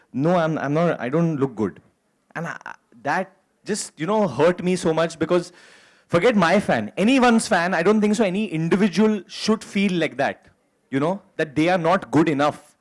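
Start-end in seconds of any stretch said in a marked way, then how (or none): 0.1-1.8 quiet, bashful, very soft little murmur. Retelling a shy fan's reply to a photo offer: imitating a very soft tone. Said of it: "in a very soft tone".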